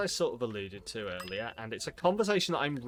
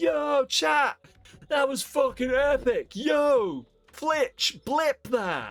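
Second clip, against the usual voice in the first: mock loud streamer yelling, higher and louder; 14 semitones higher, 8 dB louder than usual. Describing a Twitch subculture, imitating a loud yelly streamer. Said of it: "that really loud, yelly streamer who's like".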